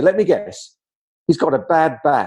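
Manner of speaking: mildly sarcastic, dry, knowing tone. Retelling own past reply to a victim's mother: retelling a sarcastic remark. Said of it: "I know I'm being a little sarcastic".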